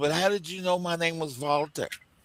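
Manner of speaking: put-on German accent. Telling a joke, quoting a man met at the Olympics, German accent. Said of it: "You have to be accustomed to the German accent".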